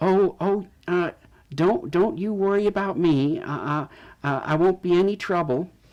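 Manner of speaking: put-on elderly woman voice. In a scene, a woman reassures the people her husband expected, in an older woman voice. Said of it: "older um, woman".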